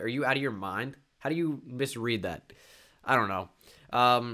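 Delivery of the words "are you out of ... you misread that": ordinary delivery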